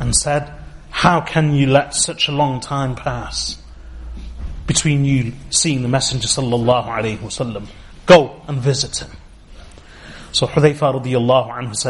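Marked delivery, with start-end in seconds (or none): none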